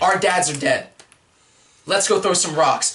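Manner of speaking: ordinary talk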